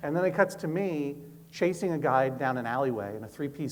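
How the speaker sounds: ordinary talk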